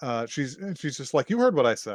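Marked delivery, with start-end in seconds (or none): none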